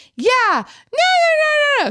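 shrill, very high yell, nos stretched out. Retelling a daughter joining in against a shopper: imitating someone yelling. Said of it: "the woman's daughter starts yelling at her".

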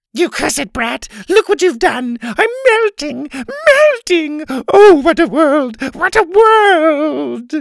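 very high and loud, world dragged out. A girl resumes her rendition after an interruption: creepy Wicked Witch melting. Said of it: "her creepy rendition of the Wicked Witch melting".

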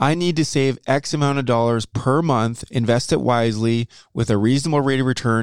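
plain

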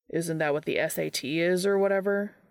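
plain

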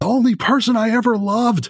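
furious screaming. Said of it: "screaming at her and saying".

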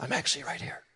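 hushed, soft, breathy whisper, barely voiced. Acting out Christ answering people who ask where God is: whispering. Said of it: "he whispers".

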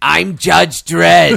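very loud, rough, belted-out voice. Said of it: "Harvey Fierstein is Dredd".

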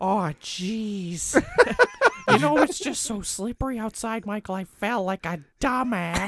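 jeez pitched very high and stretched long. Doing an impression of the actor just picked for the role: Jennifer Coolidge impression. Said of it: "That's a really good impression".

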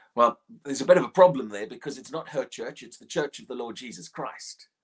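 normal talking voice

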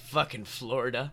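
low, quiet grumbling mumble under the breath. Narrating the custodian cleaning up Blake's blood, muttering to himself in a quiet mumble. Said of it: "He quietly mumbles".

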